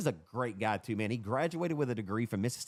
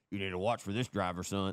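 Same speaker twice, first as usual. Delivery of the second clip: loose, rough put-on dad voice; 3 semitones lower than usual. Retelling what dad would say at the races: imitating dad, first attempt. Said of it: "My dad doesn't talk like that".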